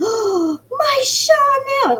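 play-acted piercing, shrill scream, very high. Retelling how she reacted on the phone, imitating someone screaming. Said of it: "she screamed it in the phone".

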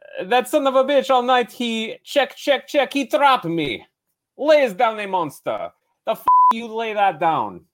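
put-on strong, convincing Russian accent pitched very high. Sharing favorite lines from the film Rounders with the group, John Malkovich Russian accent. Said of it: "As a Russian. It's a great accent".

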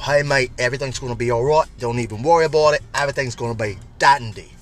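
fast, rattled-off, deliberately bad Australian accent. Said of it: "I did a horrible, horrible accent".

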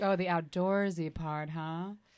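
ordinary talk

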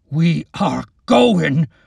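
raw, loud, ragged, outraged voice. Narrator reads Wyatt's words to the witch, in an outraged, ragged voice. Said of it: "in an outraged, ragged voice".

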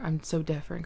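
ordinary talk, nothing marked

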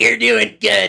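very high, gravelly, rough, smoky rasp. Retelling a line from a video of a woman commenting on boat races: imitating a gravelly, smoky voice. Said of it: "in her grovelly, smoky voice".

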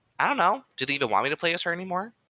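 high, hesitant, unsure, doubtful, lost-sounding tone. Retelling an answer about Captain Marvel's future at the D23 event, as a Brie Larson impression. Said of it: "She actually fucking said that in that exact tone".

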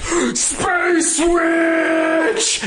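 very high shriek, word "witch" drawn out. Telling a story, acting out a man screaming as he sees her floating towards him. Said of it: "he just screams".

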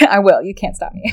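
ordinary talk

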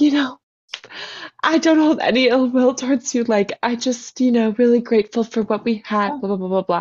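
tearful, crying voice, speaking through tears. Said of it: "I'm crying".

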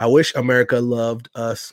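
ordinary talk, nothing marked

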